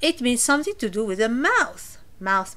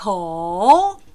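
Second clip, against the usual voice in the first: ko dips down, then climbs back up; 3 semitones lower, 8 dB louder than usual. Language lesson on the word for mouth, falling-rising tone on 'ko'. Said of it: "The tone should go down like ko and up again".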